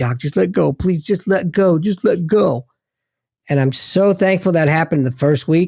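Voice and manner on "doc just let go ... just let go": desperate, tearful, pleading voice. Retelling how the dude in tears begged to be let go: imitating someone begging. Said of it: "He's begging me".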